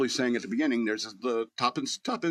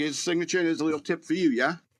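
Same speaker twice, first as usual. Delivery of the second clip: put-on English accent; 4 semitones higher than usual. Retelling what a pizza customer from England said: imitating an English customer. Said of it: "He's like".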